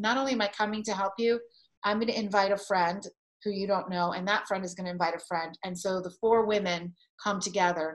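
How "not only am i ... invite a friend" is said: ordinary talk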